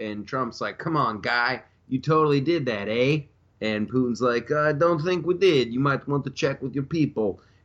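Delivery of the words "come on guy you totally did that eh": put-on Canadian accent. Acting out Trump talking to Putin, as Trump with a Canadian accent. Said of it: "Trump's also Canadian".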